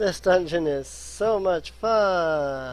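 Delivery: extreme, dripping sarcasm. Waiting for a platform to lower in a dungeon, heavy sarcasm. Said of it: "Note this extreme sarcasm in my voice".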